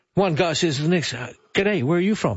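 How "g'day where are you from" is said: usual speaking voice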